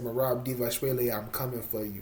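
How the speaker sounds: ordinary talk, nothing marked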